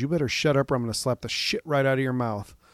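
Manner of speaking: loud yelled voice. Speaker retells their mom yelling at their mouthy little brother, retelling a yelled threat. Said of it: "she's yelling".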